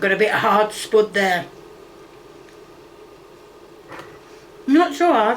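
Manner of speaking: talking with a mouthful of food. Speaker eating and tasting food, talking with mouth full. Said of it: "I've got a mouthful of food".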